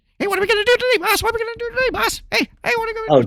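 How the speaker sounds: very high, fast, loud, rattled-off yapping. Recalling a cartoon's little dog running around: imitating the little cartoon dog Tyke. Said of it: "the little dog was always, like, running around going".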